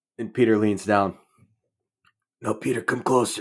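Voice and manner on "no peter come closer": put-on dying man voice. Acting out a dying man calling Peter closer: imitating dying Uncle Ben. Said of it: "finds him dying on the street".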